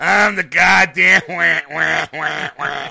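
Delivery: booming, very loud, dragged-out comic-villain wail. Mocking the other speaker's Batman line: imitating Penguin voice. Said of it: "you sounded more Penguin than Batman".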